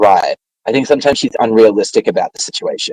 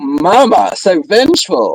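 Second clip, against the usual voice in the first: mock, deeply sarcastic, high, sing-song delivery; 6 semitones higher than usual. Retelling a dinner scene, quoting Cliff: sarcastic Cliff imitation. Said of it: "Cliff is being deeply sarcastic".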